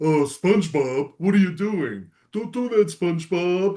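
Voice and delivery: cartoon character voice. Showing off impressions of cartoon characters, in Patrick Star voice. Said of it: "Patrick sounds like".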